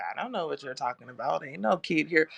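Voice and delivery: mock unbothered, far too calm, easy. Retelling what the lady said about the missing kid: imitating someone too calm. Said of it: "the lady's just too calm".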